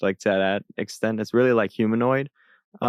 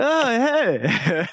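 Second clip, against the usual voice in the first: mock very high, tipsy, drawn-out drunk voice; 12 semitones higher than usual. Describing a character's first line, imitating a drunk-sounding voice. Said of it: "he sounded drunk at first too".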